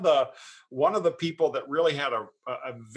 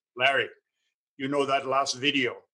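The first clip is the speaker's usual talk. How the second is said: put-on Hungarian accent. Retelling what the chairman said before a talk: imitating Andy's Hungarian accent. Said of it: "in his Hungarian accent".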